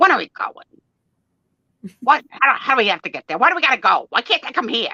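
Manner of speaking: loud, tough, mobster voice. Retelling how Tom asks questions about going somewhere, imitating Tom as tough mobster. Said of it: "Like like a like a tough mobster".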